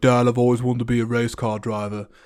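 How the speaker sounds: terrible, bad, put-on British accent. Recounting a movie scene, speaker quotes a character telling his dad; terrible British accent. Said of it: "that's a really terrible impression of a, a British U K person".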